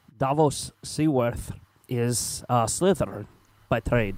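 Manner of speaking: faltering, unsteady delivery that comes out sounding Scottish. Ranking a character in a house, trying a Davos impression. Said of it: "my best s-, Davos impression here".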